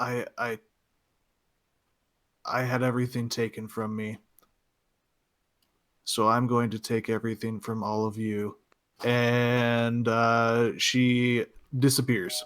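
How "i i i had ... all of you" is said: hushed, close, threatening half-whisper. Narrating a game, voicing a woman who leans in close, half-whispering. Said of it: "she leans in and whispers".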